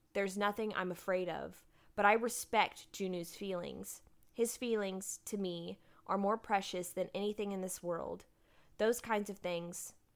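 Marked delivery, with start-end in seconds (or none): none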